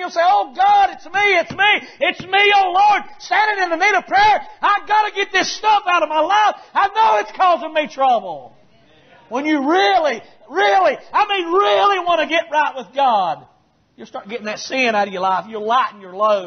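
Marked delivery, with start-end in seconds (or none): 0.2-8.5 mock desperate, high, crying, begging, pleading tone. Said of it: "begging and pleading and crying".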